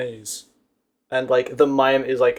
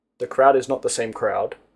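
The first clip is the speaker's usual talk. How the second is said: ordinary talk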